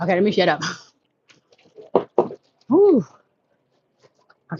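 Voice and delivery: out of breath. Talking to viewers after running up stairs: out of breath. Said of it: "I'm getting out of breath".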